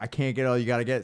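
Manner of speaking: put-on crying, tearful pleading voice. Retelling how a boy with a barrel stuck on his head begged: imitating someone crying. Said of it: "he's, like, crying".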